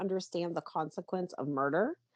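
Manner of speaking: ordinary talk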